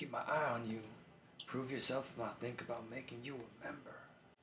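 very low, sketchy, shady voice. Reading a game character's dialogue aloud to a co-player, in a sketchy Marlin voice. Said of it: "Why you make him sound so sketch?".

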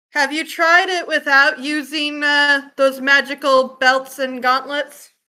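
loud voice rising in pitch. A player asks two fighters about their glowing magical belts and gauntlets, quite loud. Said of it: "I'm just going to quite loudly say".

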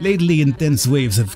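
ordinary delivery

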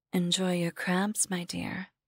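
muttering under the breath. New Maya looks up at her former bedroom window, muttering under her breath. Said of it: "New Maya muttered under her breath".

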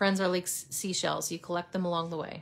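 ordinary delivery

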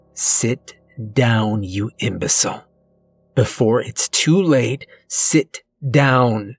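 hissing. A woman sitting opposite hisses at a shouting man. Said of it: "She hisses".

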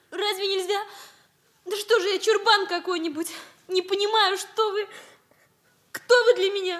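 tearful, crying through the words. Saying farewell, after admitting to tears: crying. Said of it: "Ну, плачу".

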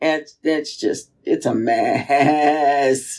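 goaty, bleating goat-like voice. Agreeing with the other speaker in conversation: goat-like voice. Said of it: "I sounded like a goat just then".

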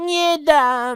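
shrill, very high, loud shout. Damianek holds on to his diary as Karolek grabs it, shouting. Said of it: "Krzyknął Damianek".

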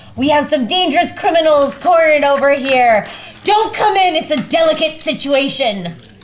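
high, fast yelling in a cat-like voice. Player voicing a character who shouts out, in a cat voice. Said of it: "I shout out in a cat tone".

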